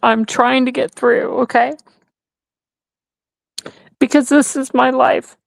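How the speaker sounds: crying while talking. Speaking to the others while fighting back tears: crying while talking. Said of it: "Yes, I'm crying".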